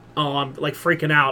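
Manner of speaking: ordinary delivery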